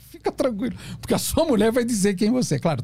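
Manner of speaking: sarcastic, tongue-in-cheek tone. Talking to Leandro about a voicemail recording, ironic. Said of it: "tô sendo irônico".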